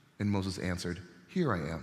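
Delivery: plain reading voice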